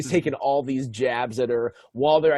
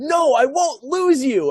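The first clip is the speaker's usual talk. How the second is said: very high, very slow, drawn-out shriek; 12 semitones higher, 6 dB louder than usual. Retelling a scene where Phoebe screams as her boss walks by: imitating Phoebe screaming.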